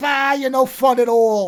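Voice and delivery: put-on very loud, slow, drawn-out Brooklyn accent. Quoting the girl from Akira to another person, in a Brooklyn accent. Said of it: "Brooklyn accent".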